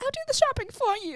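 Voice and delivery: very high-pitched voice. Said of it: "she talks in that high pitched voice".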